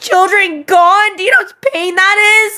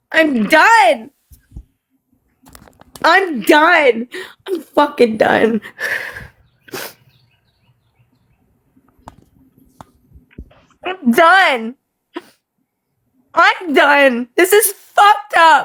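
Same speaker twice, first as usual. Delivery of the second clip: low, tearful crying, breaking down in tears; 4 semitones lower than usual. Speaker on a show with thousands watching, fed up with viewers, crying. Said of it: "because I'm crying".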